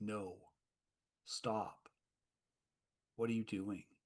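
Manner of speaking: small, half-whispered voice. Voicing a small voice in a character's head: half-whispering. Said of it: "It's, like, whispering".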